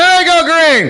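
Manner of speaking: very high-pitched shouted yell. Calling the race start without seeing the green light: yelling. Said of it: "so I'm just gonna start yelling".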